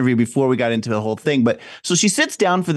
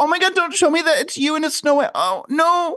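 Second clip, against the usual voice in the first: very high, exaggerated, over-the-top fake sobbing. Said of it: "they were both fake crying".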